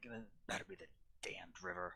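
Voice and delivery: low, soft, grumbled muttering under breath.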